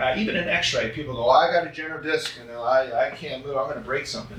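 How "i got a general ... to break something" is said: ordinary delivery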